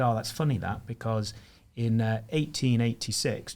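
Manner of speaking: ordinary talk, nothing marked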